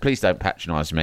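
low, polite, gently courteous tone. Retelling how a woman interrupted a man who was talking to her: imitating a polite reply. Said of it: "she really politely and kind of says".

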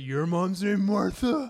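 very loud, high, booming superhero voice. Quoting the film scene about both mothers' shared name, in a Batman voice. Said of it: "it's in the Batman voice".

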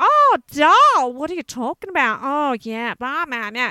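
loud, full-on, heavy put-on Australian accent. Imitating a girl they once lived with, full-on Aussie accent. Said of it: "put on this really full on Aussie".

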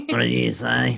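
rough-sounding delivery.

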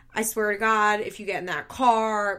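ordinary delivery

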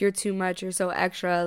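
normal talking voice

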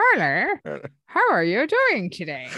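swooping, animated cartoon character voice. Mocking the other speaker's imitation of them, the speaker does a South Park cartoon voice. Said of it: "I sound like someone from South Park".

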